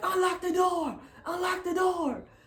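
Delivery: shrill, very high screaming. Retelling a police officer at the car door: imitating a police officer screaming. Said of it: "while he's screaming at me outside of my door".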